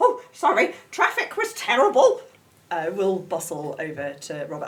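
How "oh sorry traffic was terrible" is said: very high, flustered voice, all in a flurry. Playing a duck character who arrives late: flustered. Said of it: "she will come in quite flustered".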